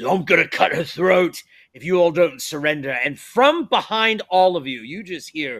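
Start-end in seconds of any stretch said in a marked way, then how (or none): 0.0-2.9 threatening, dangerous, menacing tone. A game master voices a captor holding a knife to a hostage: threatening. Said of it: "he threatens".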